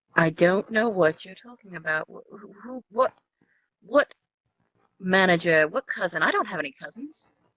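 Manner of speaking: feigned dazed confusion, muddled and lost-sounding. An adventurer being taken for questioning plays dumb; feigned confusion. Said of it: "Hey, chat, I'm lying. / I think she hit her head really hard on the way down. / I, I hit my head, I think. Yes, clearly. Everything's a little foggy".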